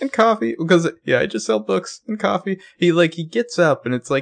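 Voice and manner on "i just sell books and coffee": high-pitched, humble-sounding character voice. Imitating a character's line after being asked to do his moment: imitating Ezra's voice. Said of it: "my Ezra voice".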